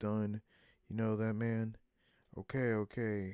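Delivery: plain reading voice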